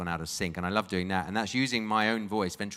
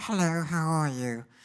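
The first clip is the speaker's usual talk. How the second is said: falsetto, much higher and slower; 9 semitones higher, 3 dB louder than usual. A ventriloquist answering which voice is hardest, demonstrating a falsetto voice. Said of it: "the falsetto voices".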